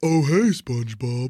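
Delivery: cartoon sea-star character voice. Answering a request to do Patrick, the hard one: Patrick impression. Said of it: "We found the guy who can do a Patrick".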